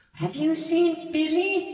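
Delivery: put-on very high, weeping, crying little-girl ghost voice. Narrator voicing a ghost girl who looks up as the players come in; crying little-girl ghost voice. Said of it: "kneeling, and crying, a ghost that looks like a small girl".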